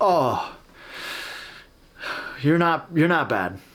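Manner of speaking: put-on Ukrainian accent in English. Retelling a man's praise, the speaker imitates his Ukrainian accent. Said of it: "With his Ukrainian accent".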